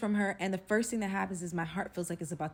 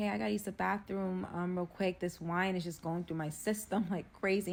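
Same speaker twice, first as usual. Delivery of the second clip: normal talking voice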